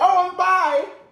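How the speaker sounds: high mock chirp. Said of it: "And I was like".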